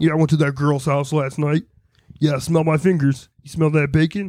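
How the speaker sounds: deep put-on frog puppet voice. Doing a stand-up bit in Kermit's voice: Kermit the Frog voice.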